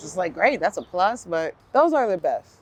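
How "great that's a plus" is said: normal talking voice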